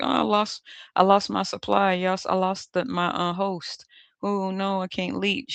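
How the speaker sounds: slow, tearful, weepy, blubbering crying voice. Telling how the other person lost their supply: imitating someone crying. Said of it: "they crying and shit because they like".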